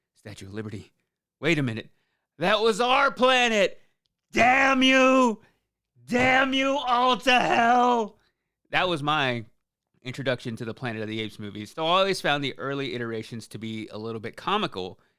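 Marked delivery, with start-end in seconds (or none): 2.4-8.2 very high, drawn-out, top-of-the-lungs scream. Recalling a Simpsons parody of Planet of the Apes, Homer Simpson impression, screaming. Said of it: "screaming at the top of his lungs".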